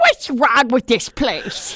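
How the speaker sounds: loud, annoyed, fed-up tone with big swoops. Retelling seeing Carol Channing walk out of a hotel: Carol Channing voice, annoyed. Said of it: "I'll always remember that and that voice".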